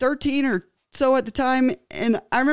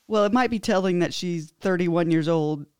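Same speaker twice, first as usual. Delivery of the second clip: ordinary delivery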